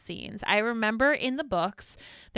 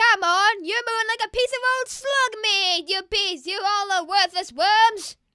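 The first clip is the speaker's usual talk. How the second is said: put-on Scottish accent; 11 semitones higher, 6 dB louder than usual. Showing the other speaker what to say, in a scottish accent. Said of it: "but with the accent".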